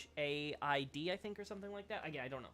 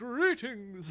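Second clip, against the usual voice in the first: put-on character voice, belted very loud and high; 7 semitones higher, 12 dB louder than usual. Repeating a greeting from chat: Oswald of Kareem voice. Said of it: "In the Oswald of Kareem voice".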